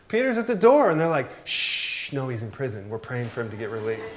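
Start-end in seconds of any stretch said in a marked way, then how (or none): 0.1-0.9 acted freaked-out shriek, very high-pitched and loud. Retelling the story of the girl who sees Peter at the door: acting out a girl freaking out. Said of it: "She kind of freaks out".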